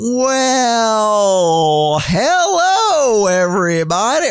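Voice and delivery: very slow, dragged-out, well-stretched drawl. Explaining how a slow talker sounds at single speed, the speaker does imitating Fatty's slow talk. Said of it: "that was your big fatty impersonation?".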